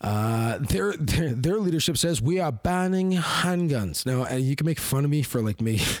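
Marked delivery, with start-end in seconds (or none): 2.2-4.0 horrible New Zealand accent attempt, pitched higher. Quoting new zealand's leadership, in a horrible attempt at a new zealand accent. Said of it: "trying a horrible attempt at that accent".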